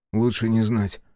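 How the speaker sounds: usual speaking voice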